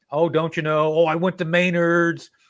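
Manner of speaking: put-on Minnesota accent. Describing a man, the speaker acts him out, imitating a Minnesota accent. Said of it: "he's got that Minnesota".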